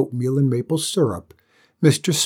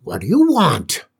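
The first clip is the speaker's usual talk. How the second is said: put-on cranky, wary, crotchety old-man voice, pitched up; 5 semitones higher, 4 dB louder than usual. Narrator reads an old man answering a knock at the door: crotchety, suspicious old man. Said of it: "an old man's voice, crotchety and suspicious".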